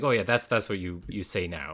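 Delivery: ordinary delivery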